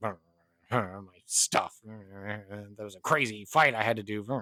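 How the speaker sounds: low, drawn-out mutter under the breath. Voicing a character shoveling food into her mouth at a campfire, muttering. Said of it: "she's just kind of like muttering".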